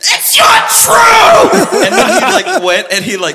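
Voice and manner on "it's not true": very high-pitched, loud scream. Retelling how a little brother reacted to a TV result: imitating a scream. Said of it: "he, like, screamed. He was like".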